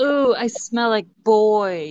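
terrible put-on British accent. Retelling what she said, in a god-awful british accent. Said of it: "in this god awful British accent".

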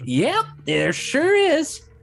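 put-on elderly orc woman voice, very high and very loud. Voicing an elderly orcish woman answering a question: elderly orc woman voice. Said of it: "that elderly orc, orcish woman, just go".

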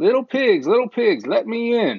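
high, squeaky, put-on disguised voice, little squeak. Narrator reads the disguised wolf calling to the pigs, squeaky disguised wolf voice.

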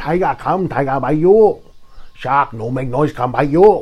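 put-on Chinese accent. Speaker, who says they are Chinese, shows listeners they can do it: Chinese accent. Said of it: "I can do that Chinese accent".

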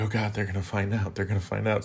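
put-on panicked, freaking-out outburst. Recounting trying to put out a fire alone, retelling freaking out. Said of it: "so then I'm freaking out".

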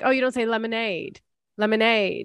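put-on British English accent. Retelling what the English people said about a word: imitating English people's accent. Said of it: "and then they were like".

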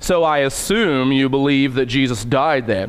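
condescending, patronizing, talking down. Showing how asking a believer whether Jesus died could sound, condescending. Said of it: "unless I say it kind of condescending like that".

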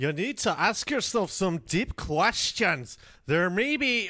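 put-on Scottish accent. Asked to pick an accent, speaker reads a passage aloud in a Scottish accent. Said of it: "give me an accent to read it in".

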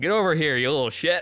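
heavy mock southern drawl. Retelling how a man would call him over, the speaker uses a strong southern drawl. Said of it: "strong southern drawl he could summon".

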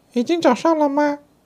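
very high, rushed, frantic, panicked shout. Startled by the church bells, the rooster cries out, panicked shout. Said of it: "惊慌着喊着".

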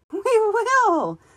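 gleeful, merry, very high-pitched laughing cry. Forest creatures answer a pledge in turn, merry laughing cry. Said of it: "cried the merry Ryles, laughing".

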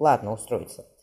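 ordinary talk

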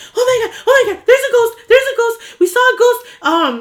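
mock, frantic, very high, panicked shriek. Retelling a ghost sighting and banging on a neighbor's door, retelling panicked screaming. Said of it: "but I'm screaming".

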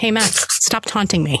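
ordinary talk, nothing marked

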